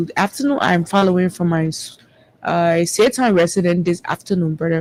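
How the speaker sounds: ordinary talk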